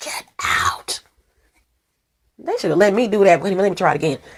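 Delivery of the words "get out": whispered voice. Imitating the voice from a horror movie: Amityville Horror voice. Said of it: "the voice in the Amityville Horror movie".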